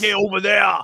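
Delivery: very low voice with full bass. Showing another speaker how the cartoon character sounds: Uncle Ruckus voice with bass. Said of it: "you gotta get that fucking bass in your voice".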